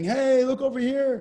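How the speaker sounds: mock very high, shrill, loud, drawn-out taunting scream. Describing how the devil taunts believers: mock devil screaming. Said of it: "The devil's just screaming".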